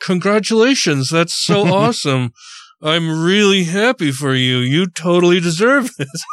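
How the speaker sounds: through clenched teeth. Speaker retells a man's reaction to their news in a meeting: retelling words through gritted teeth. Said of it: "he said basically through gritting teeth".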